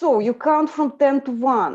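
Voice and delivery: very strong Eastern European accent. Trying out reading a relaxation script, in super strong eastern european accent. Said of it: "with super strong Eastern European accent".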